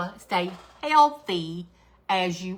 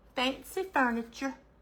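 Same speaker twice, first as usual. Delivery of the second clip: put-on Southern accent; 5 semitones higher, 5 dB quieter than usual. Describing a craft paper's name, saying it in best Southern accent. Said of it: "can you say fancy in your best Southern accent?".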